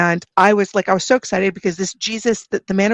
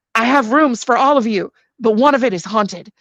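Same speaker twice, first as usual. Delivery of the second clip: acted, grouchy, ornery, cantankerous voice; 3 semitones higher than usual. Retelling a tv scene where a man offers rooms: imitating an ornery man. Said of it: "this very ornery guy there".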